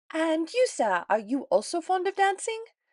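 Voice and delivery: piercing, shrill, very high-pitched voice. A woman calls out to a gentleman standing nearby, in a shrill voice. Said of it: "Missus Bennet's shrill voice called".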